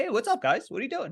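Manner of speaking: bubbly, peppy, very high voice. Retelling answering a manager's call about a layoff: imitating own peppy tone. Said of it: "I was all peppy".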